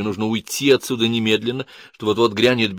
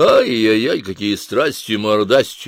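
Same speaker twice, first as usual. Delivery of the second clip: mocking, derisive, slower pace; 4 dB louder than usual. Chiptsov, entering a room where a man is howling, speaks mockingly. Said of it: "насмешливо сказал Чипцов".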